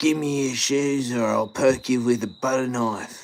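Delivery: slight, high-pitched Australian eshay accent. Speaker showing off how he can talk, in a bit of an eshay accent. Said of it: "I can speak in a bit of an Ashay accent".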